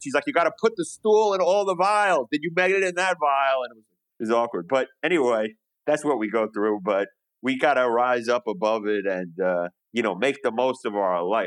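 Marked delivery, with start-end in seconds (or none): 0.3-3.6 put-on high-pitched scream, blaring very loud. Retelling how a lady in an office called out: imitating someone screaming. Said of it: "she's screaming about my stool test".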